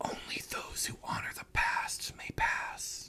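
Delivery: hushed whisper echoing as if in a chamber. Game master voicing what players hear entering the room, echoing whisper. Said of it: "you guys hear a whisper that echoes".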